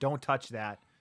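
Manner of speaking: ordinary talk, nothing marked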